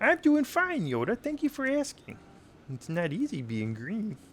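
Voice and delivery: very high pitch that swings up and down. Doing a requested impression, in a Kermit the Frog voice. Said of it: "so I'll do Kermit the Frog now".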